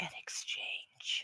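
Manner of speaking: barely-there, very quiet whisper. Voicing the god Bel in a dream, offering a trade: whispering as the god Bel. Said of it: "And Bel whispers".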